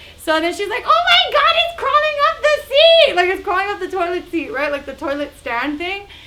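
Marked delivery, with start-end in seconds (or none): 0.8-3.1 high, loud bloody-murder scream. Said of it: "bloody murder".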